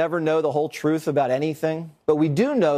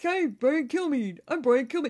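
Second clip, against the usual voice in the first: very high-pitched, energetic dude voice with pumped-up energy; 10 semitones higher, 5 dB quieter than usual. Showing how he talks: Brian Kilmeade impression. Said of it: "Talks kinda like".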